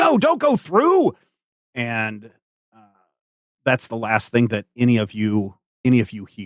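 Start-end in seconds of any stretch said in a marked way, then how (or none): 0.0-1.1 very high-pitched shouted yell. Voicing a character warning the group not to go through: Badger yelling. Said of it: "Badger yelling at you guys".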